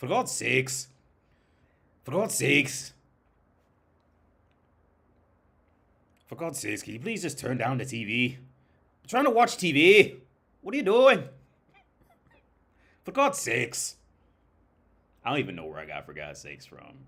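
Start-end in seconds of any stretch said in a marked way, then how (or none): 0.0-13.9 put-on, loud, high-pitched Irish accent, popping out. Speaker acts out a remembered exchange with an Irish accent. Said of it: "get the Irish accent popping out".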